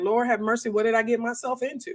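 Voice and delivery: acted crying voice. Retelling the first homeschool day on the bed: retelling own crying. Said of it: "I was left on the corner of my bed crying".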